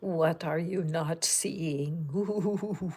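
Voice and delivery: put-on spooky voice. Opening today's Pick a Card for viewers, in a spooky voice. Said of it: "I'm trying to do a spooky voice".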